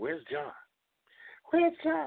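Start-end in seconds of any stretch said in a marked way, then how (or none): 1.5-2.1 tiny, very high, swooping little voice. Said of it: "in that little high voice of his".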